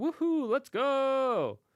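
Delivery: mock very high, very loud whoop, "go" drawn out. Voicing a dragon flying up in a trailer: imitating Spyro having fun flying. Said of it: "He's having fun flying".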